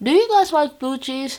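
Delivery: talking with a full mouth. Asking the listeners a question mid-snack, talking with food in mouth. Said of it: "I'm talking with food in my mouth".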